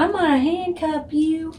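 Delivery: small, cute, high-pitched little country twang. Quoting what he said while handcuffing, in his little country voice. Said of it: "He's so country".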